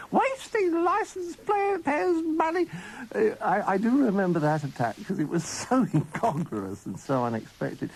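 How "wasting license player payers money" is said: very high, shrill, scolding yell in a pepper pot voice. Recalling a tea lady who attacked them, the speaker imitates her pepper pot voice shouting. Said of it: "shouting at us almost in a pepper pot voice".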